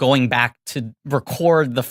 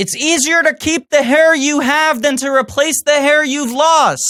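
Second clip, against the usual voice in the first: yelling, higher and louder; 12 semitones higher, 5 dB louder than usual. Talking to someone on speakerphone: shouting. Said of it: "You don't have to shout".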